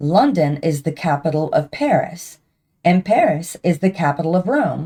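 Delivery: ordinary delivery, nothing marked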